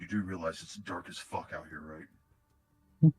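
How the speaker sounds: very quiet, hushed, softly spoken. A character glances between the map and the listener, then speaks very quietly. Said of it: "he very quietly goes".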